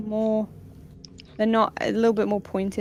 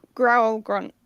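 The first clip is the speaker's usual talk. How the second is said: ordinary talk, nothing marked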